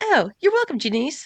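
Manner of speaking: very high, upbeat, chirpy, perky assistant voice. Describing the upgraded Alexa's replies: perky Alexa voice. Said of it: "the new hip, sexy, kind of perky Alexa".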